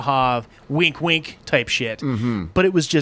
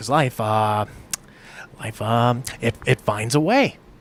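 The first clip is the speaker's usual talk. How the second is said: bad put-on halting actor voice, lower; 5 semitones lower than usual. Trying out an impression of Jeff Goldblum's movie line: shitty Jeff Goldblum impression. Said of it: "Shitty Jeff Goldblum".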